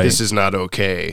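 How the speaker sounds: ordinary talk, nothing marked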